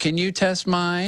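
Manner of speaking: put-on high, slow, polite little old lady voice. Retelling a drink check before boarding, an old lady asks for hers: little old lady voice. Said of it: "this old little old lady voice".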